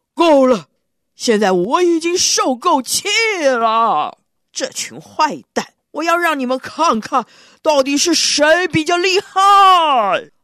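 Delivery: furious, roaring bellow of rage. Reading a story aloud, the narrator voices a character's angry roar. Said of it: "气得大吼".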